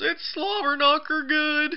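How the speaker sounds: put-on choked, strangled voice, very high and slow.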